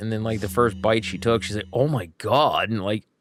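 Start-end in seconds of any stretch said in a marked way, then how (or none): 1.7-2.7 astonished, impressed, amazed voice, acted. Retelling a niece's first bite of his cooking: imitating amazed niece. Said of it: "she was really amazed".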